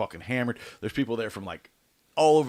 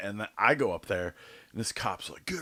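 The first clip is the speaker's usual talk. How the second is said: ordinary delivery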